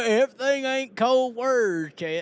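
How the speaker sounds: put-on speaking in a Southern accent. Repeating the other speaker's line back to him: imitating Ryan Timms's southern accent. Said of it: "look at the southern accent we got on Ryan Timms".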